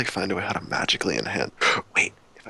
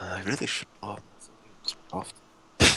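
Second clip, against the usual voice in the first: soft, grumbling mutter under the breath; 8 dB quieter than usual. Speaking in character in the game, muttering under breath. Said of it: "under my breath".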